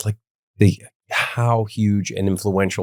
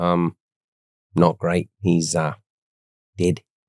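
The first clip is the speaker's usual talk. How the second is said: put-on slow, drawled Australian accent; 4 semitones lower than usual. Retelling a friend's answer about his sick dad: imitating a friend, Australian-sounding. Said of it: "it's an incredible impression".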